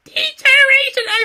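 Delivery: very high, weak squeal. Retelling how Road Dogg grabbed the mic: Road Dogg's weak high-pitched squeal. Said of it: "weak, high-pitched squeal of a voice".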